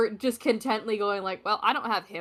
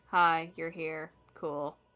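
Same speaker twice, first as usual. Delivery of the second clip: put-on flat, disconnected monotone; 3 semitones lower than usual. Describing a cold, disconnected greeting, speaker acts it out, mimicking a monotone greeting. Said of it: "it's a very like monotone nice to meet you".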